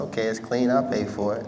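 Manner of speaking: usual speaking voice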